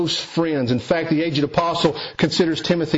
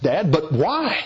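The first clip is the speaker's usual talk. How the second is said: play-acted, with the voice raised. Retelling asking his father why he cannot go, raised voice. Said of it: "raise my voice and ask".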